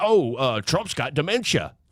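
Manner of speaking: normal talking voice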